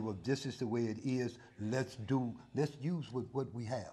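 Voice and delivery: ordinary delivery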